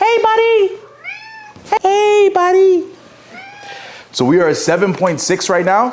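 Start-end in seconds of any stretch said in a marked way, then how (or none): 0.0-2.9 very high, slow pet-talk voice. Greeting the cat after saying cats ignore deep voices, high-pitched voice for the cat. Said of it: "the cat doesn't respond to this voice".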